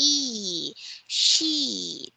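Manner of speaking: elongated long e vowel. Modeling the word for a learner during pronunciation practice, drawn-out long e sound. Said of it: "say it with a long E sound".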